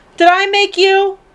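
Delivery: puzzled, high deity voice.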